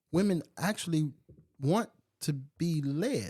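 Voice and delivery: very slow, deliberate, every word weighted. Discussing someone looking to you for leadership, saying it very slowly. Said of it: "I said that very slow for a reason".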